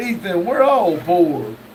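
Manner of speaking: plain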